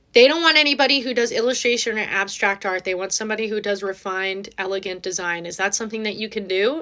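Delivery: ordinary talk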